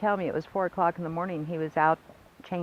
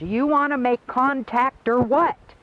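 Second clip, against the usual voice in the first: loud, pitched-up, challenging yell; 6 semitones higher, 7 dB louder than usual. Retelling how a man yelled at a spaceship: imitating someone yelling. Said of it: "I got out of the truck and I yelled".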